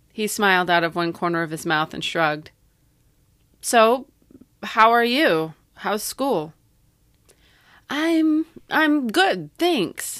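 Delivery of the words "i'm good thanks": stammered, stuttering, voice very high. Asked how they are, the narrator answers him, stuttering. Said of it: "I stuttered".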